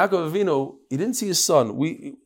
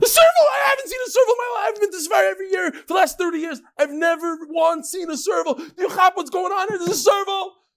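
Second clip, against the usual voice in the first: mock, very high, worked-up, excited shouting. Retelling the man's outburst on seeing the animal: imitating excited shouting. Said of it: "He started screaming".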